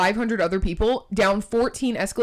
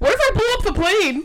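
put-on, very high, loud, shrill outburst; 11 semitones higher, 4 dB louder than usual. Retelling what she said in the airport TSA line, retelling a loud remark. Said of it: "She loudly goes".

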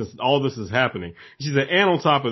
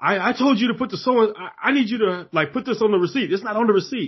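mock, high-pitched, irate screaming rant; 8 semitones higher than usual. Retelling how a customer screamed at the cashier: imitating a man screaming. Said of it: "he's screaming, he's like".

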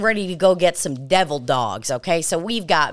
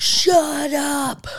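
put-on drunken shout, high-pitched and slurred-sounding yell; 9 semitones higher than usual. Telling a story about a drunk stranger yelling at the group, retelling his yell. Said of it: "He's basically yelling at all of us".

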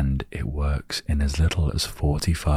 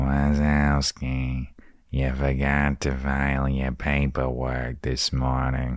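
animated, put-on monster voice. Doing a quick impression of Roz from Monsters, Inc.: Roz from Monsters, Inc. voice. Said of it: "That was like Roz from Monsters, Inc".

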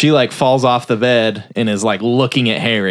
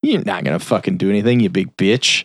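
put-on condescending voice; 3 semitones lower than usual. Retelling a movie scene, a guy cleaning up: imitating a condescending tone. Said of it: "kinda condescending".

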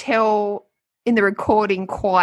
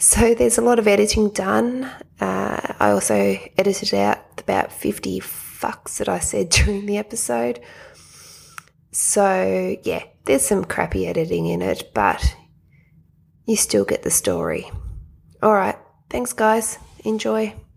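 hushed whisper. Recording a quick note from a hospital bedside, whispering. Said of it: "Sorry for the whispering".

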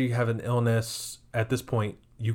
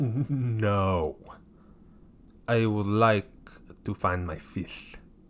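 terrible put-on French accent, spoken very slowly. Retelling a story, the speaker quotes someone in a terrible French accent impression. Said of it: "That's my French impression".

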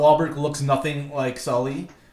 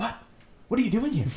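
soft, higher-pitched acted voice; 7 semitones higher, 5 dB quieter than usual. Complaining about how the film's Sully sounds, doing a Mark Wahlberg impression. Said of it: "And then it's Mark Wahlberg like".

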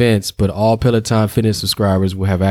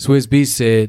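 ordinary talk

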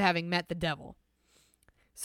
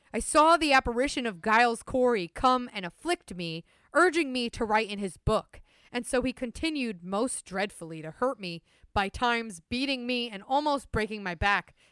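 plain

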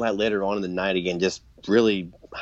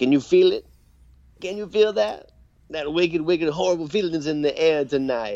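crazy, wild voice, very high-pitched; 9 semitones higher than usual. Retelling a wrestling promo, imitating the wrestler's crazy voice. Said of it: "he's got this crazy voice".

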